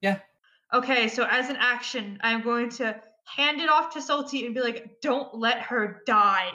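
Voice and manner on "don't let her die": very serious, louder and slower. A player, as a game action, hands something off to another character, in a very serious voice. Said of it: "in a very serious voice that looks like".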